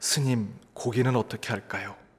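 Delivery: acted-out, mimicked whisper. Telling a joke, acting out a waiter asking a monk, retelling a whisper. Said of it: "귓속말로 묻습니다".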